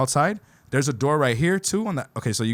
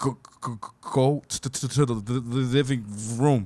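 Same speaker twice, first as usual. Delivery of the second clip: slow, scared mock stutter, tripping over words. Retelling telling friends to go to the living room: imitating own scared stutter.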